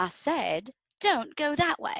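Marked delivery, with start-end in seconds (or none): 1.0-2.0 put-on British accent, pitched up. Retelling a scene with a little worm character, in a british accent.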